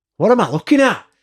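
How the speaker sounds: loud, very high barking voice. Retelling what a man in a full office would say, imitating a loud voice. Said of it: "Does he have a loud voice?".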